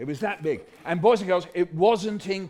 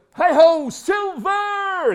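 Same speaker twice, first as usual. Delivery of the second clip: very high, loud, mighty drawn-out cry; 12 semitones higher, 7 dB louder than usual. Telling a Lone Ranger story for listeners to copy, mighty cry. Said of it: "with a mighty cry of".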